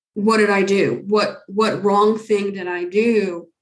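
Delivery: frightened, fearful voice. Retelling a caller's worried question about the medicine: imitating a frightened caller. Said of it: "I could hear the fear in her voice".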